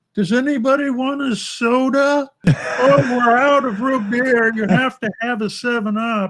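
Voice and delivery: put-on shrill, very high holler from afar. Imitating a player yelling from the kitchen two rooms away: imitating someone yelling from another room.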